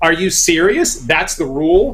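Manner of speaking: mock stunned, incredulous double-take disbelief. Retelling hearing the paralysis rule: retelling own incredulous double take. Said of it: "I do a double take".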